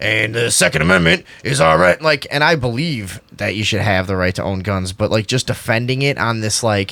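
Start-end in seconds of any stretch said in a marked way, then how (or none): 0.0-2.0 gravelly, creaky fake voice. Mocking a shallow gun-rights argument: Alex Jones impression. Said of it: "I guess we can tell who I was doing an impression of".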